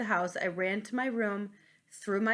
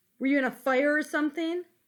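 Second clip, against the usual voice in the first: put-on higher, louder rude kid voice. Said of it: "He was like".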